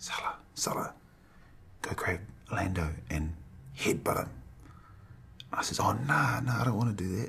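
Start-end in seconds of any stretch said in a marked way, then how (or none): 0.0-4.3 hushed, scheming, conspiratorial whisper. Retelling what someone whispered to you at a bar, retelling a whisper. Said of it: "Vigo whispers to me".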